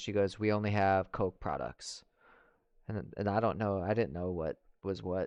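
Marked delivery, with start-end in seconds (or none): 0.4-2.0 mock curt, dry, irritated, rude flight-attendant brush-off. Retelling a flight attendant's answer to a soda request, imitating a rude voice. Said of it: "just rude voice ever".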